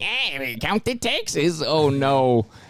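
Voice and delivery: high helium-pitched voice. Acting out a bank worker counting taxes: Marty McFly on helium voice. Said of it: "I sound like Marty McFly on Helium".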